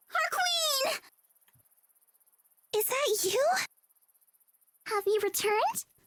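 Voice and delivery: tiny rasping squeak, very high pitch. Tiny creatures hovering anxiously greet their returned queen, squeaky, raspy, loud. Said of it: "Squeaky and raspy, yet impressively loud".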